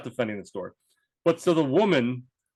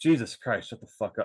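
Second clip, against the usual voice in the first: mock muttering under breath, lower and quieter; 4 semitones lower, 4 dB quieter than usual. Retelling a remark made under the breath in a store line: retelling a mutter under breath. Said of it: "under my breath".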